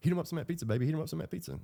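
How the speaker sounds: very high, jittery, rushed nervous voice. Retelling what the man on the bed said to the woman, imitating a very nervous voice. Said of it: "in a very nervous voice".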